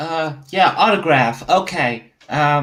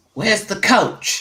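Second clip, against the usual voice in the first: full, loud, booming athlete's voice; 4 semitones higher than usual. A player in the locker room calls out for the coach, loud booming voice. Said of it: "in my full player booming voice".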